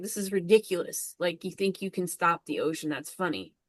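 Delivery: put-on laughing, scoffing, amused, ridiculing tone. Speaker retells a man laughing at a woman's efforts, imitating mocking laughter. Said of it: "he's laughing at her like".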